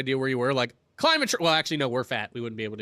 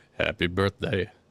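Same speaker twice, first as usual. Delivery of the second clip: very low, deep, put-on bass voice; 9 semitones lower than usual. Asked to say happy birthday, the speaker does it in a deep voice. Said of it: "Do you want me to do it in a deep voice?".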